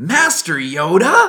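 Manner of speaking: loud stretched-out swooping call. Retelling the moment Yoda comes out and he switches over, as a young Luke Skywalker impression. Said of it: "that was a pretty good impression".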